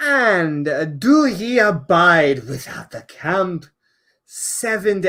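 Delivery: slow, odd, put-on, vaguely Scottish accent. Reading a Bible passage aloud: put-on accent, maybe Scottish. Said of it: "I don't know what that accent there was".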